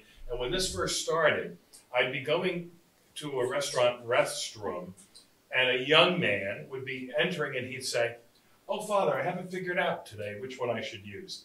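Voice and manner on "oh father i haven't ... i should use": quick, teasing, taunting, mocking tone. A speaker addressed as Father retells a young man's remark, imitating a mocking tone. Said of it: "saying it mockingly".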